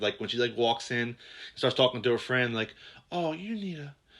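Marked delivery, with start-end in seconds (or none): 3.1-3.9 soft, high, sultry seductive voice. Retelling a scene, mimicking a woman talking to her friend: imitating a seductive voice. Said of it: "it's very seductive".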